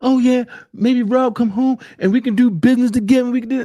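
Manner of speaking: high, mocking, fawning, leech-like voice.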